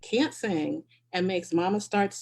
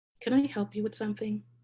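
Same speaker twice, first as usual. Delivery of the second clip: whispered in falsely sweet, mean voice; 2 semitones higher than usual. Looking up at Jen, who keeps staring, whispering in the nicest mean voice. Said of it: "I whisper in my nicest mean voice".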